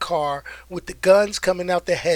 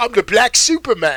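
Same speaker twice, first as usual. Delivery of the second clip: put-on smooth-sounding British accent; 4 semitones higher than usual. Imitating a line from Hobbs and Shaw: Idris Elba impression. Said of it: "that's how he talked".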